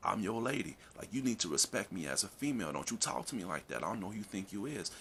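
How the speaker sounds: ordinary delivery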